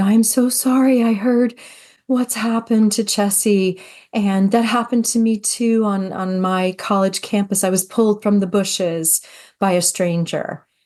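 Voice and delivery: flustered, all in a fluster. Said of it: "she came up to us all flustered".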